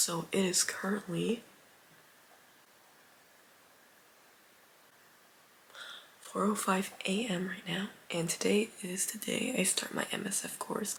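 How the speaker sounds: speaking in a whisper. Starting a video at four a.m. while people are sleeping: whispering. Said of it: "Now I'm whispering because people are sleeping".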